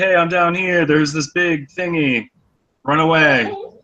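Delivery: high call, projected up from below. Playing a character yelling up to the others from below: yelling up to them. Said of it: "yell up to them".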